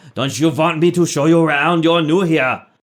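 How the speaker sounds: pushy, eager beggar voice, high and loud. Voicing a man in filthy robes who stumbles toward the cart: Gorwolf voice. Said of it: "there's a man wearing filthy robes, ... and he says".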